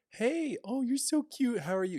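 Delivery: put-on very high, slow, sing-song baby talk. Showing how people talk to kids: baby-talk voice for kids. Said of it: "when we talk to kids, ... we kind of change the tone and everything".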